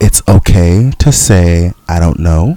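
very, very slow speech. Speaker makes a point he's long been trying to make, really, really slowly. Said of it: "speak into the mic really, really slowly".

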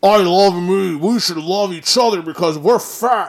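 very loud, high, mocking put-on caricature voice. Contrasting two stereotyped figures, voicing the second in a mocking fat-person voice. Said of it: "That's my fat person voice".

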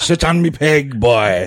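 put-on pirate voice. Joking about a scene from the pirate movies, in a Captain Jack Sparrow voice. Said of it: "I am Captain Jack Sparrow".

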